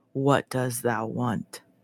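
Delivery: low, soft, luscious, tempting goat voice. Retelling a story, the speaker voices a goat answering a woman: delicious goat voice. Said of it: "the goat responds in a delicious voice".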